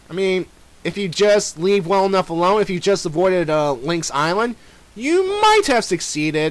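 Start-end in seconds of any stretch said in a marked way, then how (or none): 4.9-6.5 "might" stressed hard, higher and slow. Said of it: "emphasis on might".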